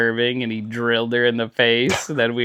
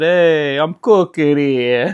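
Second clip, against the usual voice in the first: put-on slow Italian accent with tough-guy swagger; 4 semitones higher, 4 dB louder than usual. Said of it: "tough guy Italian".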